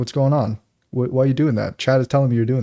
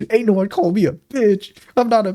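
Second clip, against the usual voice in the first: put-on high little-kid voice, raging; 8 semitones higher than usual. Speaker retells a meme of a raging little kid, imitating a little kid's voice. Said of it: "he starts talking like a little kid".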